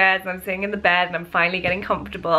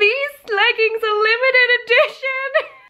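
put-on very high, upset, distressed scream; 4 dB louder than usual. Recalling favorite leggings being cut off, speaker is retelling a scream. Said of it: "I just screamed like".

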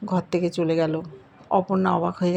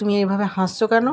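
ordinary delivery

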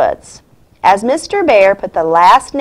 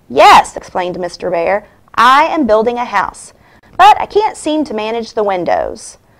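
ordinary delivery

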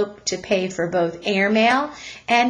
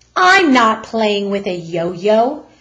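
sharp, curt, raised voice, yo-yo drawn out; 6 dB louder than usual. Reading a story, a mother answers a policeman's question, said sharply. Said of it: "Mrs. Lamb Chop said sharply".

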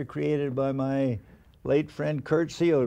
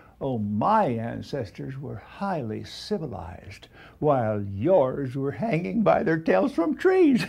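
slow, lofty, haughty, superior put-on delivery. Retelling how a woman answered his question about her accent: imitating a haughty reply. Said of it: "she haughtily replied".

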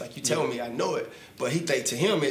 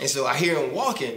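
normal talking voice

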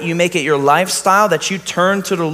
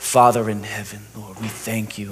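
soft, humble, calm, even-keeled prayerful voice, no show; 8 semitones lower, 6 dB quieter than usual. Retelling a brother's prayer at a college chapel: imitating a humble, calm prayer. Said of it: "it was humble, calm. It was even keeled".

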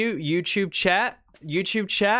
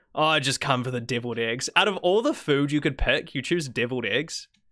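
ordinary talk, nothing marked

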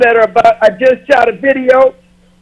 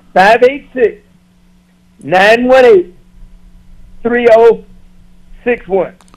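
at a slow pace. Repeating a phone number for viewers after being asked: slowly. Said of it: "could you repeat it slowly for people?".

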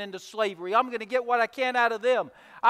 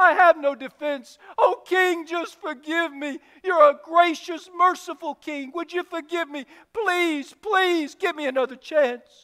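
acted tearful begging, higher; 5 semitones higher than usual. Acting out a servant on his knees begging a king: tearful pleading. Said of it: "with tears in his eyes".

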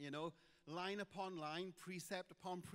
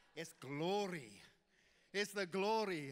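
strong, broad Welsh accent, much slower; 8 dB louder than usual. Preacher showing how the word glory sounds in a Welsh accent, strong Welsh accent. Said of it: "the word glory sounds great in a Welsh accent".

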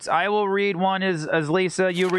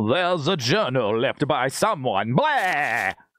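put-on vampire-like voice; 4 semitones lower than usual. Reading a found journal aloud in a voice chosen by viewers: the Count voice. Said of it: "the Count".

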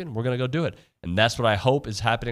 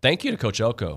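voice cracking. Thanking the coach on air, voice cracking. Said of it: "My voice cracked there".

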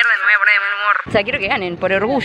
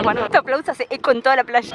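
ordinary talk, nothing marked

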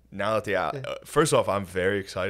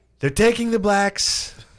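loud, very high, speech-like declaiming delivery; 12 semitones higher, 7 dB louder than usual. Acting out aliens landing, as Trump giving a speech: Trump impression. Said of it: "This is my best impression right now".

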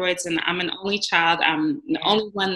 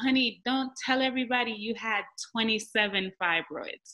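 put-on gentle, motherly, soft, sweet Jamaican accent; 3 semitones higher, 8 dB quieter than usual. Recalling starting the organization, the speaker quotes their mother in her sweet Jamaican voice. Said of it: "in her sweet Jamaican voice".

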